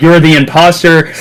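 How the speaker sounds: ordinary talk, nothing marked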